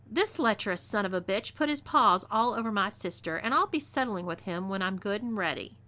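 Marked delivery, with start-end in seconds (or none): none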